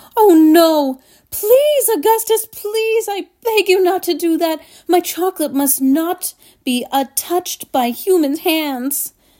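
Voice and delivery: high, loud, pleading, begging cry. Narrating a children's story, the chocolate maker cries out to a boy: crying out. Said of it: "he cried out".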